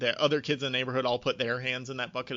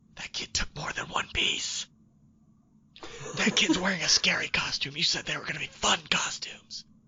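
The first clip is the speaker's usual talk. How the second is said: snide, catty, breathy whispered aside; 4 semitones higher than usual. Retelling how a six-year-old daughter whispers about trick-or-treaters: imitating a child whispering. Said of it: "she'll, like, turn and whisper to us".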